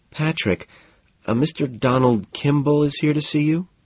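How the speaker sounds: nervous voice. Narrator voicing Jean as she tells Patrick about a visitor, nervously. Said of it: "she says nervously".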